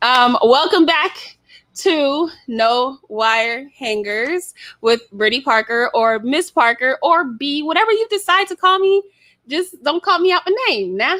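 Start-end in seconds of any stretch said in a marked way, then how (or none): 9.5-11.2 playful put-on Southern accent, pitched up. Greeting the audience, letting a put-on Southern accent slip out. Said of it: "that Southern comes out".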